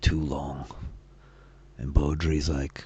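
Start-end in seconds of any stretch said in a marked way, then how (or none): 0.0-0.7 low-pitched voice. Voicing a character answering from behind: low voice. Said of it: "in low kind of voice".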